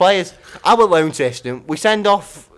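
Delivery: heated, loud, angry shouting rant. In a heated debate, others tell the speaker to calm down; shouting. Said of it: "you're shouting that".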